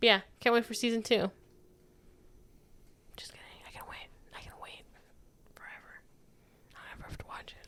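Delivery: speaking in a whisper. Joking that they never have to watch season two, whispering. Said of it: "Why are you whispering?".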